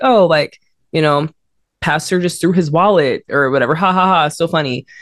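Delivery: plain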